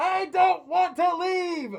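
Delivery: shrill, very high, very loud protesting yell. Voicing a character stuck in a bag, Wheatley yelling. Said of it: "Wheatley in the bag just yelling".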